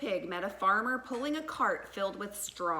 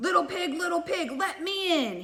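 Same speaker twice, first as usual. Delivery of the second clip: growling voice pitched high; 9 semitones higher, 4 dB louder than usual. Reading the story as the wolf knocks at the little pig's door: growling Big Bad Wolf voice. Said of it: "he growled".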